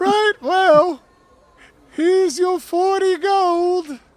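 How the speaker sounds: very loud, very high forced falsetto, gold stretched. Paying the gate official in character: diminutive Stuart voice. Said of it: "forced falsetto".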